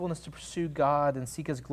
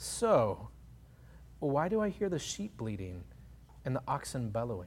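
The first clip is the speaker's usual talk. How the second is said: sarcastic, pointed retort; 2 semitones lower, 5 dB quieter than usual. Retelling the prophet Samuel's reply to Saul: imitating Samuel's sarcasm. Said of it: "with a certain level of a sarcasm".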